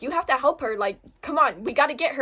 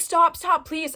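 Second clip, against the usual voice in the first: sobbing, tearful crying voice; 3 semitones higher than usual. Retelling a friend crying and begging to stop, imitating someone crying and pleading. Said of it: "She started crying".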